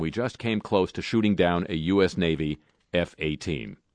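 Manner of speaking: plain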